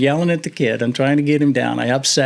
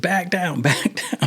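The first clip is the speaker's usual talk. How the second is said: put-on yelling, high and light; 5 semitones higher, 4 dB quieter than usual. Retelling a boat rescue, calling to Scott: imitating yelling. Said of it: "yelling to Scott".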